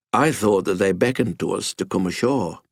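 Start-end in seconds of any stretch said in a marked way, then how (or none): none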